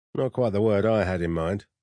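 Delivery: plain reading voice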